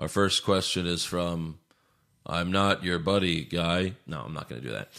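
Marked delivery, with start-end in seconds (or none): 0.0-3.9 slow, deliberate tough-guy voice. A host reads out a fan question: reading it like Reacher. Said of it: "I'll read it like Reacher".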